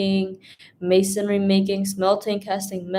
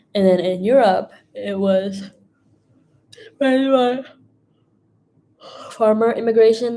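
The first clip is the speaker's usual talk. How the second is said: speech broken by a yawn, mid-yawn; 4 dB louder than usual. Explaining a lesson to listeners, yawning while talking. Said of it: "I'm just like yawning".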